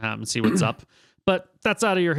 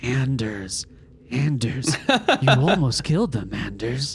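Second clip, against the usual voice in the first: eerie whisper, as if to oneself. Voicing a prisoner as the party walks away: whispering to themselves. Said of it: "you hear them whispering to themselves".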